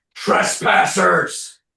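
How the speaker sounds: loud, screaming beast voice, like a bear. Storyteller voicing an intelligent bear screaming out at intruders, screaming bear. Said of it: "the bear screams out".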